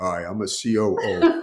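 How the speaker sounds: deliberate, very slow, deepened authoritative voice. Retelling how they used to talk as a COO, in a deeper voice. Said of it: "I used to talk in a deeper voice".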